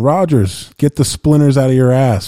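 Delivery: jeering, heckling yell. Retelling what a guy behind him kept yelling at rodgers all night: retelling a heckler's yell. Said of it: "And the whole night he kept yelling".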